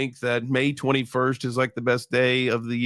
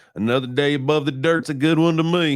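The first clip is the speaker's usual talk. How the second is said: put-on old Southern man's voice with Texas accent; 3 semitones higher, 4 dB louder than usual. Retelling what an old man says when greeted: imitating an old Southern man. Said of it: "Only people in Texas talk like that".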